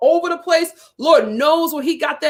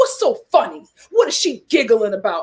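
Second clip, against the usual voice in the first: angry outburst in furious man voice, lower; 5 semitones lower than usual. Retelling a man's angry questions after he slammed the car door: imitating a furious man. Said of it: "he was so pissed off".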